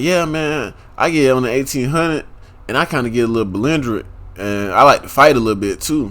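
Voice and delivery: plain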